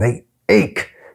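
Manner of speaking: hissed through clenched teeth. Lanchian, asked how his hands hurt, answers: hissed through clenched teeth. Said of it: "he hissed through clenched teeth".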